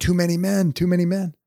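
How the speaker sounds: loud, high-pitched shouted yell. Retelling yelling at the ref from the bench: imitating own past yelling. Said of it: "And I start yelling".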